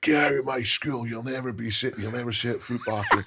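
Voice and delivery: play-acted, high, screaming, bawling tirade. Retelling being thrown out of school, imitating a man screaming and bawling. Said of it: "He's screaming and bawling".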